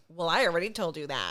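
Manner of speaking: mock grating, annoying, obnoxious delivery. Retelling how a customer answered a server: imitating an obnoxious customer. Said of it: "he did that obnoxious thing of".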